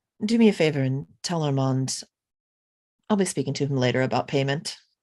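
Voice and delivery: hushed, low, breathy half-whisper. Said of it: "lean in and whisper to him".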